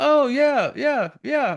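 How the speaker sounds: mock very high, slow, indulgent humoring yeahs. Retelling how the dad answers his daughter's dream: imitating Cooper humoring his daughter. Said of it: "he kinda has this like".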